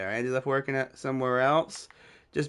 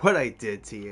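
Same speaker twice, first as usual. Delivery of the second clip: put-on laughing while talking, lower; 5 semitones lower than usual. Retelling a former friend's mocking reply: imitating someone laughing while talking. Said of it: "he's laughing like it's the funniest thing in the world".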